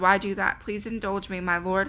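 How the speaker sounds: ordinary delivery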